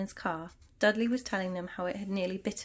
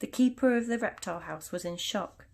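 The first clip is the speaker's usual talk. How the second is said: plain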